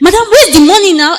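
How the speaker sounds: high, furious, angry screaming. Retelling a car ride where a driver demanded money: imitating a driver screaming. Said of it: "he started screaming at me".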